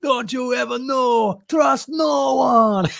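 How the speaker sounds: put-on very high yell in a Jamaican accent. Retelling a scene where a Jamaican man shouts at a spy, imitating his shout. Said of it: "this Jamaican guy shouting at him".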